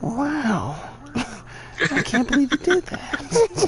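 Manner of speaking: high, slow, lazy drawl, "wow" stretched, pitch way up. Reacting whenever something happens in a show, Owen Wilson voice. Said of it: "in my Owen Wilson voice".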